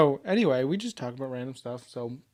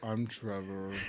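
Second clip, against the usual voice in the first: put-on mopey voice, much lower, quieter; 6 semitones lower, 11 dB quieter than usual. Showing how they say their name in a show intro, gloomy Eeyore voice.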